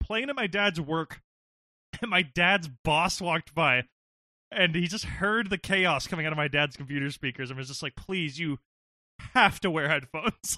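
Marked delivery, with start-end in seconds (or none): 8.0-10.6 mock tormented, tortured-sounding pleading tone. Recalling their dad's boss hearing the chaos from the computer, imitating a tortured plea. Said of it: "He sounded like he had been tortured".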